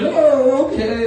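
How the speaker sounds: put-on high, loud, meek character voice.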